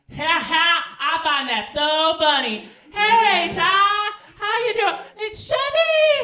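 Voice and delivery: booming laugh, very loud, shrill, high, drawn-out. Retelling someone bursting through the door: imitating Chevy laughing loudly. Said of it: "they're laughing really loud".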